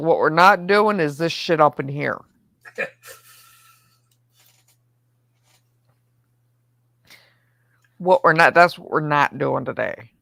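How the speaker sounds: angry scolding rant, sounding fed up. Describing how this guy reacts if you push past him, mock-angry Simpson scolding. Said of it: "we'll go Simpson and be like".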